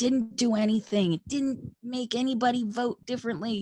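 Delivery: high, dismissive caricature of an academic voice. Talking about Russian election meddling, impression of a political scientist. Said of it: "that's my impression of a political scientist".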